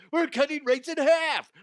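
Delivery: very high, salesy car commercial announcer voice. Announcing a sponsorship special, the speaker slips into a car commercial voice. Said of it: "I sound like a car commercial".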